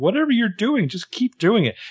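very high, felt-puppet cartoon frog voice. Acting out a caller's advice while retelling a scene: Kermit voice. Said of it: "Now you're just getting into Kermit".

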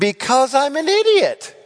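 high, loud, defiant retort.

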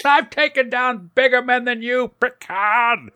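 put-on very high-pitched old lady voice. On a podcast, acting out her breakdown after Picard's speech, in a Jean Simmons old lady voice. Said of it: "I've always known you could sound like an old lady".

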